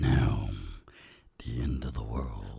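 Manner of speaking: very low, soft, dramatic put-on deep voice. Suggesting an icebreaker question topic in conversation: deep voice. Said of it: "I actually wasn't planning on using the deep voice there".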